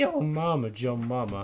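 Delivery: very slow delivery, voice breaking mid-line. Saying the joke line once more, voice cracking. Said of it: "That was a nice voice crack".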